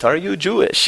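put-on Israeli-accented English. Retelling a girl from Israel questioning the speaker in line, Israeli accent. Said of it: "with her Israeli accent".

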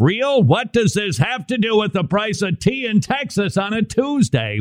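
high, baffled, mocking voice, heckling tone.

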